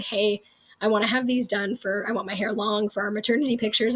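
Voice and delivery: normal talking voice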